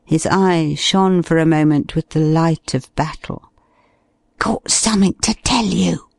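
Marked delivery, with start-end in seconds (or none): 4.4-6.0 pitched-up stage whisper. Narrator reading a character speaking under cover of the noise, whispered. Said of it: "he whispered under cover of the noise".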